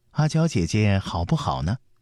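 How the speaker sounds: plain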